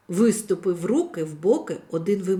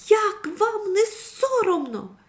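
very high, drawn-out call carried over distance; 11 semitones higher than usual. A girl spots the scene from a distance and calls out: calling out from afar. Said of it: "загукала дівчинка".

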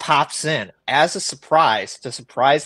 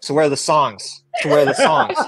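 plain

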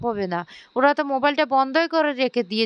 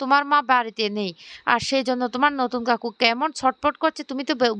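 usual speaking voice

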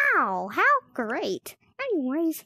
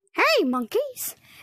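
pitched-up cartoon mouse character voice; 6 semitones higher than usual. Greeting the viewers while playing the game: Mickey Mouse voice. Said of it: "It is me, Mickey Mouse".

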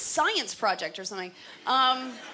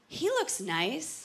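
slow, wistful woman's inner voice. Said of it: "we like to see a guy's face and think".

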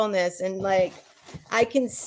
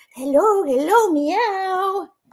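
goofy, high, dorky cat talk, long drawn-out meow; 10 semitones higher, 3 dB louder than usual. Greeting a little kitty figure from a gift box: dorky talk to a toy cat. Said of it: "Sorry, that was dorky".

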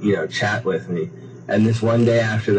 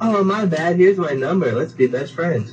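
gushing, overly friendly Californian chirp, pitched up; 8 semitones higher than usual. Comparing how people react when bumped: imitating an overly friendly Californian. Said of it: "a California, they'll be like".

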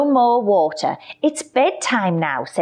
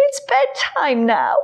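yawning, higher pitch; 5 semitones higher than usual. Narrator reading a character speaking to a lion after hide and seek, yawning. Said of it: "yawned William".

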